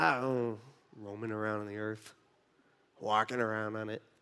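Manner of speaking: vague, noncommittal muttered mumble. Acting out Satan answering God's question: imitating Satan mumbling. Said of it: "Satan kinda mumbles to himself".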